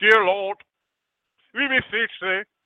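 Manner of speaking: mock British preacher voice. Showing how pastors pray in a put-on British accent prayer voice. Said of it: "If I do it in a British accent".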